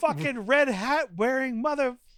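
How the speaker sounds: high-pitched screaming rant at full tilt. Imagining the entire credit sequence with friends, do Melvin screaming impression. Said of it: "Melvin screaming".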